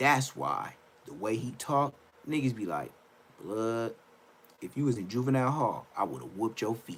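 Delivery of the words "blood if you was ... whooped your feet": low, soft gangster voice. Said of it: "Talking like that".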